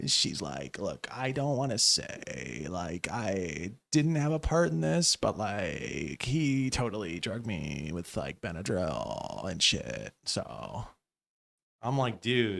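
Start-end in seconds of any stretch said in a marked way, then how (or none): 0.8-10.1 put-on voice, heavy, creaky, crackly vocal fry. Mocking a conservative political commentator's statement, imitating heavy vocal fry. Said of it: "Her vocal fry goes crazy".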